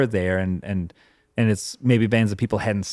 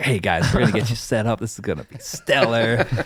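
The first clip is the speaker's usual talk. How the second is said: smooth, silky, calming, soothing tone. Imitating Dan calming frazzled arriving bands: Dan's silky soothing voice. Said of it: "soothing the whole situation over with his silky voice".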